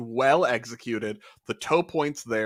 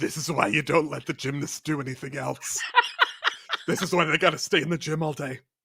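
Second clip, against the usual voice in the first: exaggerated smoker's voice, pushed over the top; 3 semitones higher than usual. Speaker pretends to pop a cigarette in and comment on gymnasts, put-on smoker's voice. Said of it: "I was trying to do a smoker's voice".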